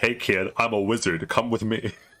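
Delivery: mock, overdone grave, serious tone. Retelling what an unshaven man said when he came in, mock-serious exaggerated tone. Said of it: "He says it in a serious, exaggerated tone".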